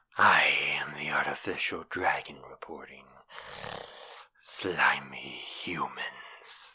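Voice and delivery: very low, bouncy reptilian dragon monster voice. Showing how they would voice a monster, in a deep reptilian monster voice. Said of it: "Like that".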